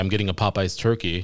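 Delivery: ordinary delivery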